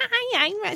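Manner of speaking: bright, very high cartoony mom voice. Answering whether their mom is shy, imitating a happy, cartoony mom. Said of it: "She's just a happy, cartoony mom".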